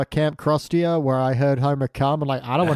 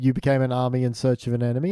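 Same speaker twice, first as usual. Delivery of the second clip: normal talking voice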